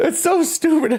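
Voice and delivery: very high voice, giggling throughout. Reading out a silly nickname, laughing while talking. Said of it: "I just can't stop laughing".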